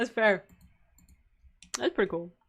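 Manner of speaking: talking while chewing, mouth full. Reacting to a comment into the microphone, chewing while talking. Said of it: "I know I'm chewing in front of the microphone".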